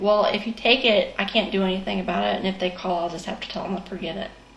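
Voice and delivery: ordinary talk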